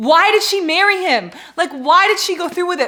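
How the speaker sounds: furious, very loud, high near-scream outburst. Reacting to a book's wedding scene while reading: furious. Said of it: "I am actually furious right now".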